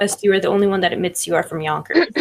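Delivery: ordinary talk, nothing marked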